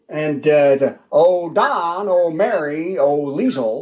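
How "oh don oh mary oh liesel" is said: every word slowly stretched out. Doing an impression: Jack Benny voice. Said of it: "I have one impression".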